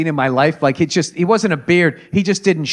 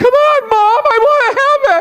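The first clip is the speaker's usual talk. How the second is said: put-on drawn-out, high-pitched young boy voice; 4 dB louder than usual. Imitating a very tall twelve-year-old asking his mom: unbroken boy voice. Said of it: "their voice hadn't even changed yet".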